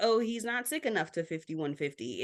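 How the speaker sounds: plain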